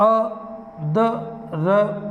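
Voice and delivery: अदरक sounded out very slowly, sound by sound.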